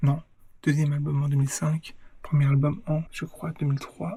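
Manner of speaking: hushed, soft, quiet voice. Introducing herself to viewers while her partner is still asleep, speaking softly. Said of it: "je parle doucement parce que ma copine dort".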